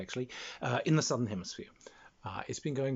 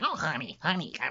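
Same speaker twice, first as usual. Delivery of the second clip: put-on harsh, gravelly, raspy New Jersey accent; 4 semitones higher than usual. Imitating a constant smoker again, harsher: harsher gravelly New Jersey accent. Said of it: "But harsher, with more gravel because she's a constant smoker".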